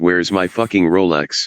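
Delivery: ordinary delivery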